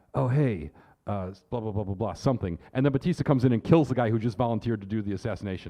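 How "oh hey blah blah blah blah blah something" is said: put-on whisper, lower. Retelling a movie villain whispering to his buddies: imitating Blofeld whispering. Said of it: "Blofeld whispers to one of his buddies".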